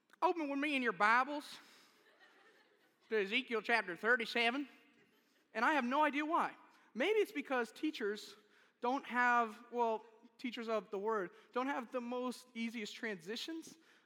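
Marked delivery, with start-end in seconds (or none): 0.2-4.7 Deep South preacher-style Southern accent. Jokingly opening a Bible reading like a down south preacher: Southern accent. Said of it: "it should always be in a Southern accent".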